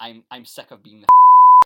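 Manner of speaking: very loud outburst broken by a laugh. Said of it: "one of the things she said".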